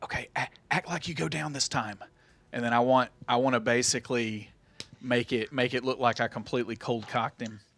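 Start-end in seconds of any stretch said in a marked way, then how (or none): 0.0-2.0 nonchalant, soft, hushed half-whisper on the sly. Speaking in character to Locke, as nonchalantly as possible: half-whispering. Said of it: "but I whisper to, to Locke".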